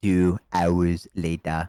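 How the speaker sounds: very low cartoon announcer narrator voice. Friends joke about having a narrator, then one tries the: SpongeBob narrator voice. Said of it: "SpongeBob narrator voice".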